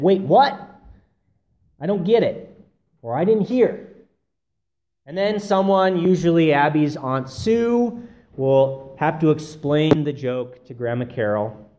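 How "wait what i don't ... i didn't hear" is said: New York way of speaking. Describing family gatherings, imitating Grandma Carol's New York accent. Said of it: "will say in a New York accent".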